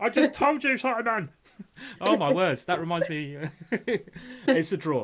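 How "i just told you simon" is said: mock cross, angry-sounding, high-pitched voice. Commentator throwing his partner's words back at them, mock-angry imitation of Fiona. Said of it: "It sounded like you were angry at me".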